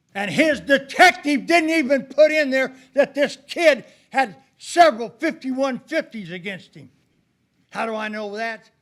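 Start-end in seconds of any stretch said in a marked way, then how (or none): 0.2-7.0 heated, loud and high-pitched. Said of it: "I'm sorry I sound so heated today".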